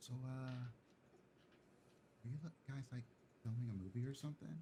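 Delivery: hushed, barely audible, very quiet whisper. The man at the door leans over to ask the players something, whispering. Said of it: "he like whispers over to you".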